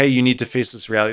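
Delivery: plain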